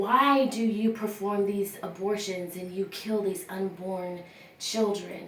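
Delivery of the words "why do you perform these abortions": usual speaking voice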